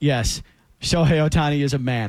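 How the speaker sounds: play-acted low, flat, dead-straight deadpan. Speaker retells a line Jake Paul delivered without laughing: Jake Paul deadpan impression. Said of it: "his, like, deadpan".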